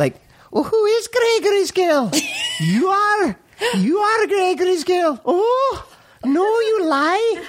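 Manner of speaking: youthful Scottish accent, high. Asked by the others to hear it, showing a Gregory's Girl Scottish accent. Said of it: "Let's hear it".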